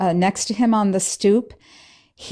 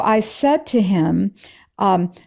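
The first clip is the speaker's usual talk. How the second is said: plain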